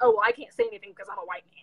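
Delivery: sulky, huffy, put-upon, flouncing tone. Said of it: "I'm not, like, trying to mock".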